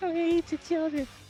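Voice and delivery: high-pitched fake lisp. Quoting a favorite line with a lisp, doing a lisping Tyson impression. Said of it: "I can't do a good Tyson".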